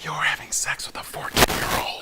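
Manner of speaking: very quiet, barely voiced whisper. Retelling own whispered reply back to him: retelling own whisper. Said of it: "To which I whispered back".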